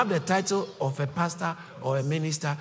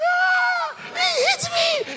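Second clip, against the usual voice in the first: mock crying child voice, higher and louder; 5 dB louder than usual. Acting out a guilty child running to mommy: imitating a crying child. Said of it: "they will be the first to cry".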